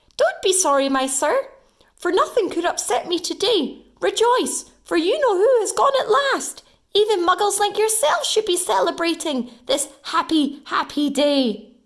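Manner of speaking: put-on very high, squeaky old man voice. Narrating a story, an old man speaks to Mister Dursley after nearly being knocked down: squeaky voice. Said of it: "he said in a squeaky voice".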